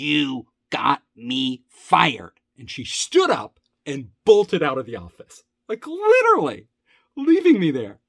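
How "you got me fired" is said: put-on angry clenched-teeth speech, lower pitched. Retelling the development director's reaction: imitating angry clenched-teeth speech. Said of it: "Her teeth were clenched, and she was angry".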